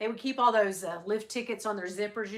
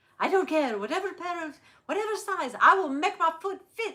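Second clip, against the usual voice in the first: attempted French accent, pitched up; 8 semitones higher, 4 dB louder than usual. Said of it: "I can't do a French accent".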